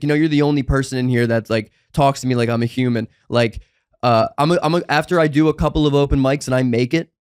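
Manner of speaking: ordinary talk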